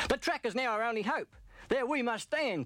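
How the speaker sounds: urgent high-pitched crying out. Narrator reads Ross as a fire approaches the track, crying out. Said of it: "cried Ross".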